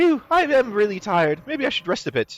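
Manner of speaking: put-on odd, high, weird little kid voice. Narrating a role-playing game, voicing a character in a weird child voice. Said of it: "do you like my weird child voice?".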